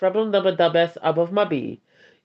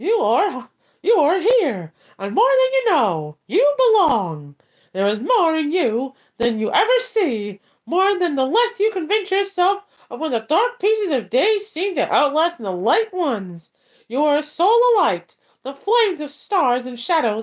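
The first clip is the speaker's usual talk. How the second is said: high, squeaky little cartoon mouse voice; 9 semitones higher than usual. Reading a published poem aloud, the speaker uses a Mickey Mouse voice. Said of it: "I will read this one in a Mickey Mouse voice".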